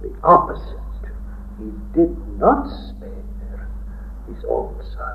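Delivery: soft, hushed, unvoiced, solemn emphasis.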